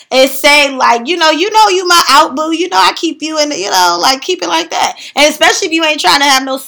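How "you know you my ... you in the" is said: breezy, lighthearted, fun, playful delivery. Showing how to tell someone they're your out boo: fun, playful tone. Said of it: "you gotta be fun with it".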